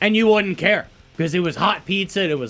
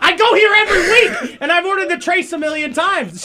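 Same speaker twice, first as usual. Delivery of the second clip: put-on drunk voice, higher pitch; 11 semitones higher, 3 dB louder than usual. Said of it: "and he's hammered".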